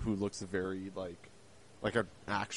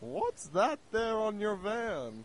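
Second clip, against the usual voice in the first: put-on very high, slow, sing-song old lady voice; 13 semitones higher, 5 dB louder than usual. Speaker acting out people reacting to her prescription delivery van, old woman impression. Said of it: "That's my impression of an old woman".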